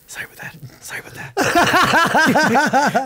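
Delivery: very high, very slow, hushed, drawn-out, sheepish tone. Retelling walking past people like leaving mass early: imitating a sheepish apology. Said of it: "almost like leaving mass early".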